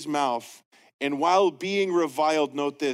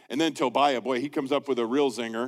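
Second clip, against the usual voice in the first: plain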